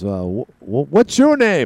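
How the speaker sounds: put-on sing-song, halting, drawn-out British accent with swinging pitch. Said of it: "British, you know, accents".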